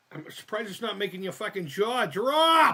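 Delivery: shrill, very high yell, stretched falling drop. Talking to d j c about the mouth opening, yelling. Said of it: "I didn't mean to yell".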